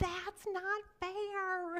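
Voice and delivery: put-on very high little girl voice, fairly stretched. Talking to parents about sibling squabbles, recalling Greta: Greta's little girl voice. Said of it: "Greta's little girl voice".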